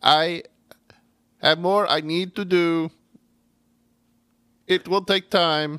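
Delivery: high-pitched, mechanical, robot-like delivery. Recounting a scene where the caterpillar answers the doctor: robotic Mr. Mind voice. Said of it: "I'm trying to be like robotic".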